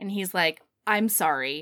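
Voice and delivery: ordinary talk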